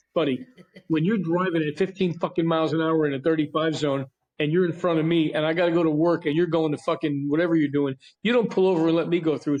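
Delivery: ordinary delivery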